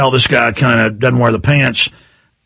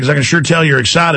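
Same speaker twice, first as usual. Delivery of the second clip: normal talking voice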